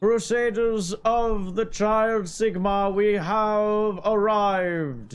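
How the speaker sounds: very high, grand, booming delivery. A helmeted crusader leader announces the crusaders' arrival, booming voice. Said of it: "Booming voice".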